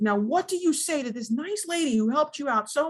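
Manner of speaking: ordinary talk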